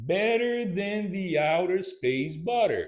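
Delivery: deliberate, linked like one word. Teaching a tongue twister, trying it slow first, slow and connected like one word. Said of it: "let's try it slow".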